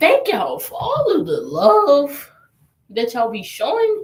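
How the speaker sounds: cracking voice. Thanking the viewers of your channel for their support, voice cracking. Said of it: "Sorry for the voice crack".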